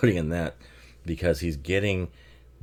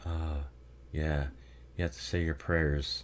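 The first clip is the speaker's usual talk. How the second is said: flat, monotone voice, dead level throughout; 8 dB quieter than usual. Describing a film performance, doing an Alicia Witt monotone impression. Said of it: "it's very monotone".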